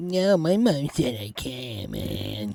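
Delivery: very slow, drawn-out cartoon kid voice. Answering an invitation to play ball at the park: Cartman voice. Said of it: "You sound like Cartman".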